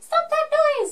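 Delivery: screechy, very high, squeaky scolding tone. Recalling being told off at school, imitating Miss Roberts's screechy voice. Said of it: "had a really like screechy voice".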